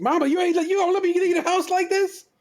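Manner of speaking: play-acted, very high-pitched yelling. Imitating a husband yelling at his mama: imitating a man yelling at his mama. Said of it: "he ain't yelling at his mama like this".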